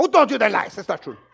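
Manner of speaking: put-on just a little Mexican accent. Imagining what Jesus thinks in his head, in a Jesus voice with little Mexican accent. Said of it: "He's got kind of this little Mexican accent".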